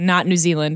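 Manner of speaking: plain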